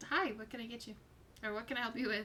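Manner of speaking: quick, courteous, polite delivery. A narrator voicing the bookstall keeper as players approach, polite shopkeeper greeting. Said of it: "a very polite smile and she just says".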